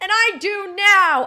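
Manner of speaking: furious shouting. Ranting at a football team owner, yelling into the mic: angry yelling.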